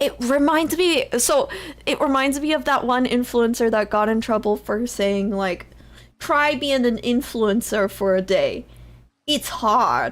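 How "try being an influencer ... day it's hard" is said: clumsy, failed attempt at a Brooklyn accent. Quoting an influencer who got in trouble, in a bad Brooklyn accent. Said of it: "I can't do a Brooklyn accent".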